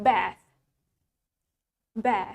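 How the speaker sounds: bath said with American short a. English teacher contrasting accents for learners, in an American accent. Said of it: "In American accent".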